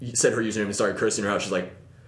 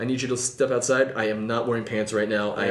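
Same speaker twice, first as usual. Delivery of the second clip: ordinary delivery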